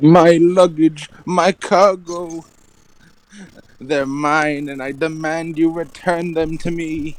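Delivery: very high, hammed-up, big comic funny voice. Asked by the other player to do a big funny voice, speaker plays a character. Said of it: "Just do just do a voice that you think is big funny".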